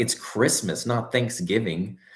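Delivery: put-on, pointedly passive-aggressive tone. Quoting Spag's reply to the speaker's holiday question, mock passive-aggressive. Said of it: "He said it like so passive aggressively".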